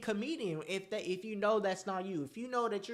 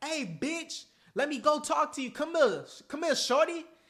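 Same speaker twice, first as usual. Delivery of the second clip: rude, crude, cocky, pitched-up catcall tone; 6 semitones higher, 4 dB louder than usual. Showing the wrong way to approach a woman: imitating a cocky, cursing guy. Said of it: "you on some cursing shit".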